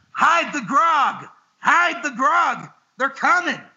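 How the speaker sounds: high-pitched, stretched-out, drawn-out hollering shout. Retelling someone walking up stairs who starts shouting: imitating someone shouting. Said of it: "he just starts shouting".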